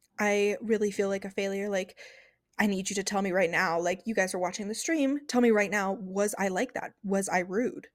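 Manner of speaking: ordinary talk, nothing marked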